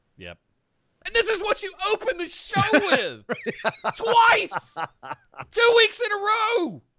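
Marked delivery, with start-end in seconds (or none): 1.1-6.7 high, loud yelling. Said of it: "Sorry, I know I'm yelling".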